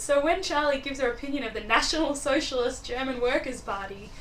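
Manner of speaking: usual speaking voice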